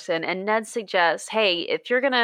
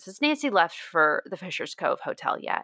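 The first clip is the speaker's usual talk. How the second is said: ordinary delivery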